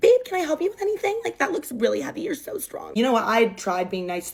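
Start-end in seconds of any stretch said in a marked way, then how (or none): 0.0-2.9 play-acted very high, honeyed, sugary sweet gushing tone. Retelling a girl's sudden switch toward a friend: imitating a sudden sweet manner. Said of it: "her complete demeanor changes and she just skips".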